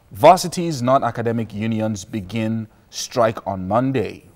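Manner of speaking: usual speaking voice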